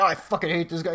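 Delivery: ordinary delivery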